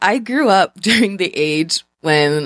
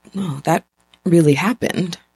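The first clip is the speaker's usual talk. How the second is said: put-on near whisper, very quiet; 2 semitones lower than usual. Retelling what the mother said after going quiet: imitating an almost-whisper. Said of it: "she says in almost a whisper".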